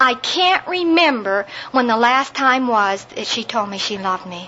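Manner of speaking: plain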